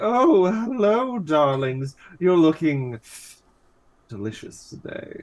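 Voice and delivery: put-on flirtatious character voice. Acting out a planned new character for the group: horny Maximilian Pegasus voice. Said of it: "only slightly more horny Maximilian Pegasus".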